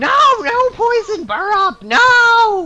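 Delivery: shrill, very high, very loud, swooping, panicked screaming. Voicing a poisoned goblin who starts screaming: screaming in character. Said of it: "He starts screaming".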